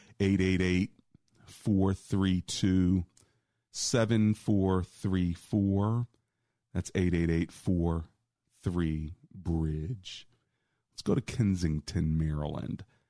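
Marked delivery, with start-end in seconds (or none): 0.2-10.3 very slow, careful, deliberate reading. Call-in show host giving the phone number as told to, very slowly. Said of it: "I've been told to say it slowly".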